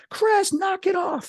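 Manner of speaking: very high, drawn-out shriek. Retelling how the mother screamed from down the hall: imitating mom screaming. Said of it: "she starts screaming".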